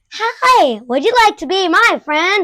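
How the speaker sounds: loud, high, drawn-out talking-toy voice. Retelling what a talking toy says when picked up: imitating a loud talking toy. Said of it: "it talks, like, in, like, a loud voice".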